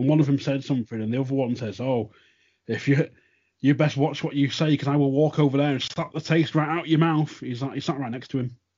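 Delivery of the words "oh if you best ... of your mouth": all-in put-on Yorkshire accent. Retelling one commentator's threat to the other, in a full-on Yorkshire accent. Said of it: "full on Yorkshire accents".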